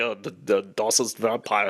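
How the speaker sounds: put-on slow, heavy, thick Austrian-German accent. Saying the vampires should talk in an Arnold Schwarzenegger accent. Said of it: "talking like Arnold Schwarzenegger".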